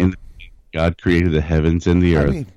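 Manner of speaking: plain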